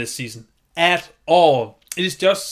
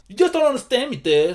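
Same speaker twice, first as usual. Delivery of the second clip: put-on high, whiny, angsty teenage voice; 7 semitones higher than usual. Mocking how the cast delivers lines, imitating an angsty teenager. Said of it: "the best impression I can do of an angsty teenager".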